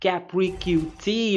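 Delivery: Capri Q T spelled out slowly and carefully.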